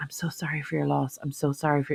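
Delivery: soft, close, leaned-in whisper. Retelling how a funeral director leaned in to speak: imitating someone whispering. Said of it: "leaning in and whispering to me".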